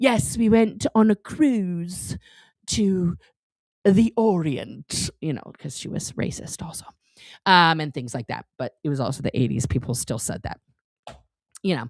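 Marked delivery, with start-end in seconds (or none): 0.0-5.1 very slow would-be aristocrat put-on accent. Imitating a grandmother who put on an accent: mock aristocratic accent. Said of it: "wanted to be an, an, uh, an aristocrat, so she would, like".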